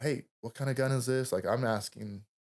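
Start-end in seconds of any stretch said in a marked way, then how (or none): 0.0-1.3 urgent, pressing voice, like calling out. Retelling a fight with a patient: retelling a yell. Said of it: "I'm yelling to this patient".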